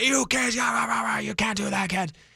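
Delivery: acted angry yelling. Speaker retells yelling at kids who flew by, in an angry yelling voice. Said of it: "yelling at them using like my angry voice".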